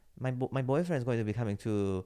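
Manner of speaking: awful, badly done put-on Spanish accent. Retelling a fellow actress's words for a stand-up bit, in a terrible Spanish accent. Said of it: "This is a terrible Spanish accent".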